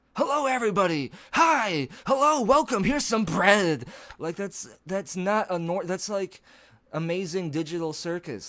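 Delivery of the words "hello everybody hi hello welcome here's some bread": very loud, manic, enthusiastic, cheerful shouting. Describing someone who yells while smiling, the speaker demonstrates: smiling, enthusiastic yelling. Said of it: "yelling at you, but they're smiling and enthusiastic".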